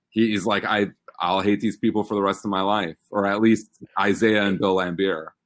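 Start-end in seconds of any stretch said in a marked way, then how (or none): none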